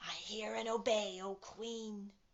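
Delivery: growled, growling wolf voice. Narrator reads the wolf's answer to the Queen, growling wolf. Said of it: "growled the wolf".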